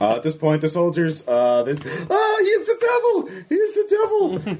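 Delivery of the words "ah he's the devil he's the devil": panicked, frightened shouting, higher. Voicing soldiers who see a devil approaching: panicked yelling soldiers. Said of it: "And they're just yelling".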